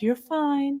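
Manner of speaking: sweet, soothing motherly voice. Retelling the other speaker's reassurance: imitating someone's mom mode. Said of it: "You went into, like, mom mode".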